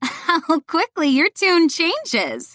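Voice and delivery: words squeezed out between laughing gasps. A character laughing at the narrator's remark, speaking between gasps of laughter. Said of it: "she says between gasps".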